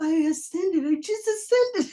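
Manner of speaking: high, giddy exclamation.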